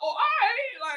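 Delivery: voice shot way up very high. Retelling their own reply when someone asked about a show, voice going high. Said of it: "Like my voice got high".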